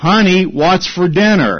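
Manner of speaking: acted, pointed, fed-up, mildly emphatic delivery. Telling a joke, the husband asks his wife about dinner, loud voice. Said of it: "asks again in a loud voice".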